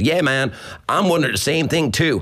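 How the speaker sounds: put-on American accent, pitched a bit up. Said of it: "an American voice goes".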